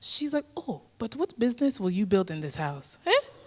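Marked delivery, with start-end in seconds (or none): 0.6-3.0 put-on West African accent. Retelling a talk with mother: imitating mom's west african accent. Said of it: "my mom has a wonderful accent".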